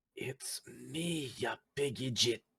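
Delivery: hushed, breath-only, very quiet half-whisper. A player character half-whispers to Lando after checking his pulse: very quiet half-whisper. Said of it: "very, very quietly whisper".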